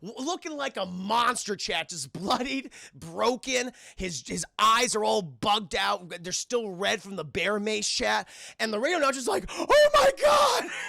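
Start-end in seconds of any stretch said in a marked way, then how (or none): 9.5-10.7 mock, very high, shrill terrified shout. Retelling a radio announcer's reaction as a bloodied man crashes through the door, imitating terrified cry. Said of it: "Just terrified".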